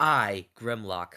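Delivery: haughty, refined, snobby voice. Proposing how a character could talk: snobby Grimlock voice. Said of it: "smart in a snobby way".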